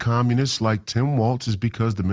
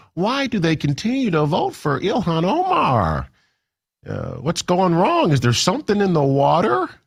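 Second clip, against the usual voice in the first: put-on heartland American accent; 6 semitones higher than usual. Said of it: "that's typically the type of accent I hear".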